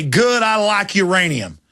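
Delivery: slow words with chuckling throughout, acted out. Imitating cops who would laugh at the idea: imitating someone laughing while talking. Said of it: "would laugh and say".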